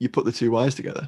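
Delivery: put-on New York accent, deadpan, matter-of-fact delivery. Discussing weird film dialogue, quoting a man on the wires, imitating matter-of-fact delivery. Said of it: "in the most matter-of-fact way".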